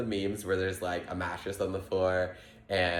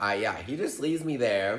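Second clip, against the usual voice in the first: normal talking voice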